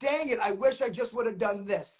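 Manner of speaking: ordinary talk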